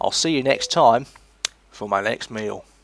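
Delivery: clumsy, badly done put-on Australian accent. Describing a cooking video host's sign-off, the speaker does a bad Australian accent. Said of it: "I can't do the Australian accent very well".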